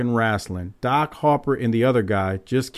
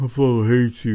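put-on drunken, slurred speech. Retelling what a drunk co-host said: imitating drunken slurred speech. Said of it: "He was just slurring his words".

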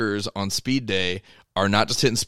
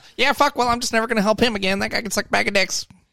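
very high, squeaky, heated cursing; 12 semitones higher than usual. Acting out the reaction after being back-talked: Louie Simmons impression. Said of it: "That's pretty good Louis impression".

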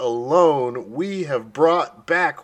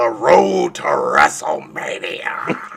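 put-on wrestling announcer voice, lower; 8 semitones lower than usual. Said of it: "That's a good Vince voice".

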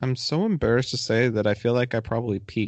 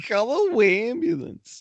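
very high, deliberately annoying, grating put-on voice; 12 semitones higher than usual. Discussing a film, the speaker quotes a line in an annoying put-on voice. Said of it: "I just use this voice because it annoys people".

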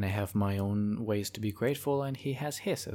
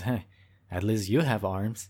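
mock-serious, very grave tone; 4 dB louder than usual. Retelling how a woman answered a man's complaint, retelling in a very serious tone. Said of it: "says in a very serious tone".

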